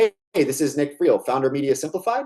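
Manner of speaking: rising, question-like tune on "Simplified". Showing how to introduce yourself at the start of a call: rising, question-like inflection. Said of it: "I'm going to leave it like a question".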